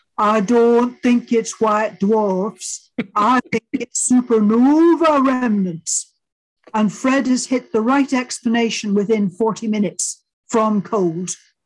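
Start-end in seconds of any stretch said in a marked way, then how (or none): 0.2-6.1 put-on Yorkshire accent. Retell Fred Hoyle speaking first at the end of Tony's talk, in Fred Hoyle's Yorkshire accent. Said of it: "in his best Yorkshire accent".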